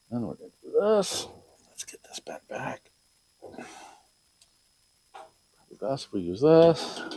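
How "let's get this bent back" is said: soft, unvoiced, dropped whisper. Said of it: "gonna whisper".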